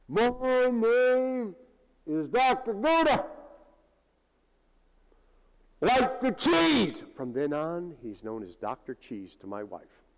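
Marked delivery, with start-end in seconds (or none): 0.1-7.0 very high, loud, drawn-out scream at full lung power. Retelling how a doctor introduced himself: imitating Doctor Gouda screaming. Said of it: "he screams at the top of his lungs".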